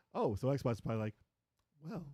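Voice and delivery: normal talking voice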